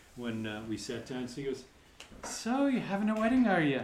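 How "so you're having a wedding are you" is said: very high, fake, put-on Irish brogue. Retelling what a man said when they sat down, put-on irish brogue. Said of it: "he happened to put on the brogue".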